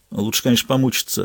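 ordinary delivery, nothing marked

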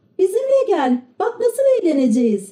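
shrill shout, pitched way up. Several children urge a reluctant boy to come with them, shouting. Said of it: "diye bağırdılar".

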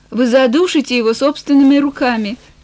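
plain

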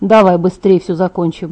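ordinary delivery

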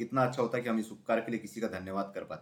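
ordinary delivery

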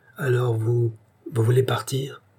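shy, timid, quavering, trembling voice. Narrator reads a woman timidly asking again, a timid, trembling question. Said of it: "cette question tremblante".

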